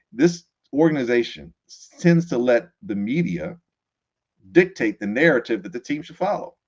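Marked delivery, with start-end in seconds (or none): none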